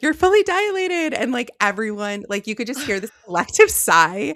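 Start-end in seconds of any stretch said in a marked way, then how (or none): 0.0-1.1 thrilled, excited voice pitched very high. Telling of her labour, quoting the midwife's news: imitating excited midwife. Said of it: "My midwife very excitedly said".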